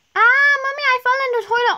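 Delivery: high, loud shout. Acting out a child calling to Mommy from the toilet: shouting. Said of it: "why is [name] shouting?".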